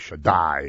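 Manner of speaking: Shaddai, stress on the last syllable dai. Explaining that accent on the last syllable makes it big: stress on last syllable dai. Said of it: "when you put the accent on the last syllable, that means you're making it big".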